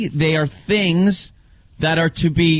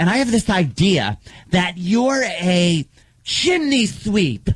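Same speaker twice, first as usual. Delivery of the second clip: camp, showy, flamboyant delivery. Retelling a scene from a show: imitating a flamboyant pageant coach. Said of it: "flaming homosexuals that are going like".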